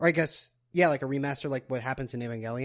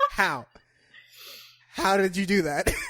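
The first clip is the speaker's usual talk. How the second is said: acted wounded, stung tone, high-pitched; 6 semitones higher, 3 dB louder than usual. Retelling how another character reacted to hearing of a whole season arc; imitating someone hurt. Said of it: "She was so hurt".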